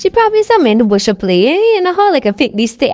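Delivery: loud, fast, dismissive put-on voice.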